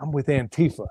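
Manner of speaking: put-on whisper. Retelling what a stranger said to the speaker: imitating a whisper.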